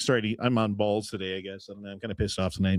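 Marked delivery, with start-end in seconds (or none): none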